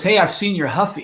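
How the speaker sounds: ordinary talk, nothing marked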